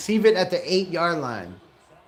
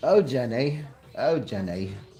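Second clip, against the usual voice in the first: put-on voice of heavy elderly British man, lower; 5 semitones lower than usual. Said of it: "I sound like a fat British guy that's seventy-nine with bronchitis".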